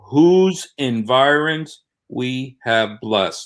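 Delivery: slow, deliberate, unhurried reading. Speaker reading part of a Quran verse aloud in a discussion, reading slowly. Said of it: "read slow".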